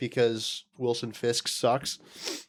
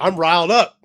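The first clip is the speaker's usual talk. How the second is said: mock very loud, pumped, riled-up voice, breathing hard; 5 semitones higher, 11 dB louder than usual. Retelling someone he talked to, imitating riled-up, aggressive breathing. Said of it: "I'm like talking like this and I'm also breathing like aggressively".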